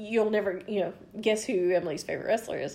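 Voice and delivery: ordinary talk, nothing marked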